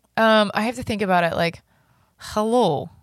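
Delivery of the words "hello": put-on Russian accent. Taking turns trying Russian accents, put-on Russian accent. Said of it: "do you want to do yours? ... Like".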